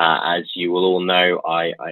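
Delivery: normal talking voice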